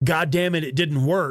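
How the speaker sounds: put-on pissed-off, frustrated anger. Recounting a scene, voicing a character's reaction when it failed: retelling a pissed-off outburst. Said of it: "she's all pissed off".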